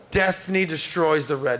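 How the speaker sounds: ordinary talk, nothing marked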